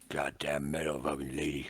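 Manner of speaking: put-on very low, slurred grumble under the breath. Narrator voices Lazenby wincing beside Alexa, slurring under his breath. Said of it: "he winces and he slurs and he goes".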